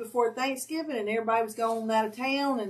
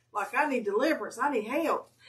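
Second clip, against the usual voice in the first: ordinary talk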